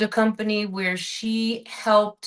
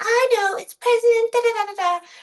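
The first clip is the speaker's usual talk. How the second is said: very high, know-it-all chirp; 13 semitones higher than usual. Retelling a TV episode, imitating the girl who knows everything: Cindy Brady. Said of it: "she's like".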